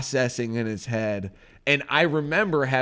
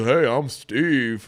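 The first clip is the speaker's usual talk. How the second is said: child's silly put-on grown man voice, drawn out slow. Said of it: "he's the man".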